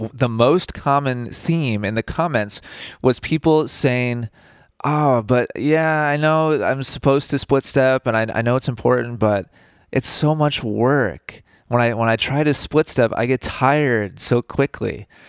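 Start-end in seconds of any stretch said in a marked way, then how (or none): none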